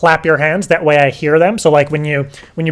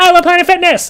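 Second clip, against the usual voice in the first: fast, shrill, high, full-volume yell; 14 semitones higher than usual. Explaining how to record an audio sample, shout as loud as possible. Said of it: "just maybe just quickly as loud as you can".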